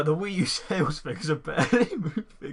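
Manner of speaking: giggling and laughing while talking. Reading out a news story, laughing while talking. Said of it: "Sorry, I can't stop laughing".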